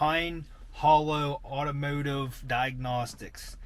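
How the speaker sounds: slow, careful, deliberate enunciation, each word read separately. Host names another channel he will link, said slowly and carefully. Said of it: "I had to say that slow".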